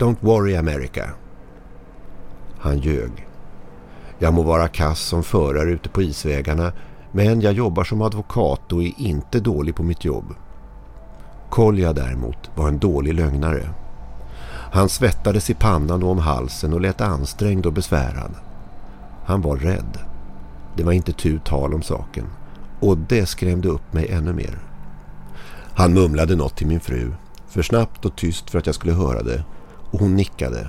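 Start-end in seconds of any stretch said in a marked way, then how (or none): 0.0-1.1 exaggerated mock Russian accent, like a cartoon sailor. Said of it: "ropade han med parodisk rysk brytning".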